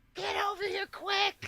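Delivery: very high, thrilled, excited scream. Retelling calling someone over to see a baby monkey: imitating screaming at someone. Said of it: "I was screaming at Courtney".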